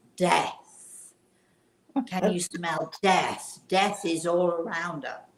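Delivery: very loud, theatrical, dramatic stage whisper. Retelling a woman answering her friend's question, imitating a loud whisper. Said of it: "in a very loud whisper".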